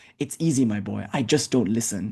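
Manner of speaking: mock conspiratorial whisper. Telling a joke, voicing the older one's punchline: imitating a conspiratorial whisper. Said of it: "with a conspiratorial whisper".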